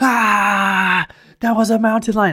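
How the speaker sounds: very high, terrified, drawn-out shriek. Retelling running away from a mountain lion: retelling own screaming. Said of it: "I was just screaming".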